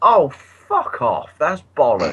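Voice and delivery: put-on very slow, drawn-out, sing-song shout at top of voice. Retelling an outburst in a cinema: imitating shouting at top of voice. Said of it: "I actually shouted at the top of my voice".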